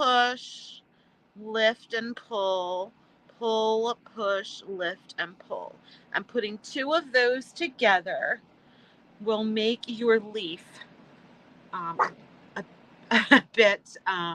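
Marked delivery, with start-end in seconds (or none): 6.1-14.3 speech broken up by laughter throughout. Speaker explaining leaf moves to viewers, laughing while talking. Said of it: "sorry for laughing".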